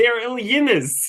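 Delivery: put-on forced Kentucky accent. Recapping the moment Sam answers Berto, Sam's forced Kentucky accent. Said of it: "trying so hard to do that Kentucky accent".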